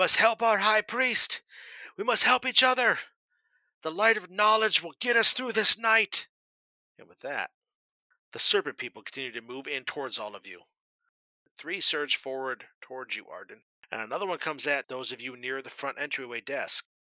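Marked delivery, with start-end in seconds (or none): 0.0-6.3 loud yelling, pitched up. Narrator voicing Egil on a desk, calling out to the brothers: Egil yelling. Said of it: "He seems to be yelling towards".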